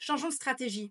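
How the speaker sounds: calm, firm, assertive, well-modulated voice. Proposing a change of strategy: calm, assertive voice. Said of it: "Une voix posée, affirmée comme vous venez de le voir".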